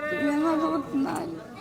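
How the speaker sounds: high, soft, tearful, crying, pleading voice.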